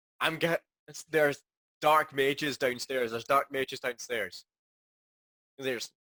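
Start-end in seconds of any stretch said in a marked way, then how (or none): none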